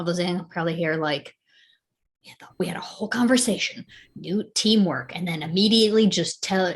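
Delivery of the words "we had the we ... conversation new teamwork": quiet whisper under the breath. Running with the group, complaining so only one companion hears: whispering under breath. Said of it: "I'm whispering so only Johnny can hear".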